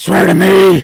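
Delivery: very loud, harsh, grating bellow. Talking about Batman's voice in the third movie, the speaker does a Batman voice. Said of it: "me doing the voice gave me a head rush".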